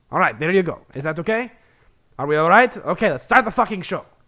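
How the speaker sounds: very loud, angry, rushed, fake bad Russian accent. A host poses as the show's angry Russian producer, in a bad Russian accent. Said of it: "myself doing a poorly done Russian accent".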